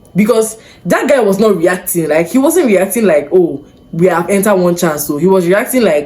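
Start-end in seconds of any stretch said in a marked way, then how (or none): none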